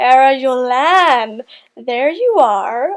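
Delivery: very slow, swooping, hissing snake voice. Reading a story where a voice calls out behind Amber, hissing snake-like. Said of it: "a snake-like voice hissed".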